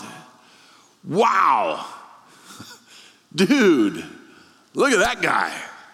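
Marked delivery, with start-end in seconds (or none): 1.0-5.5 brash, high, loud mocking bark. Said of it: "barks out".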